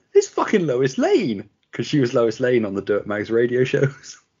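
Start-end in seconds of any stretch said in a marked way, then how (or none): 0.1-1.5 high blurt, louder than intended. Retelling your own remark that made people look at you, imitating saying it too loud. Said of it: "I said louder than I meant to".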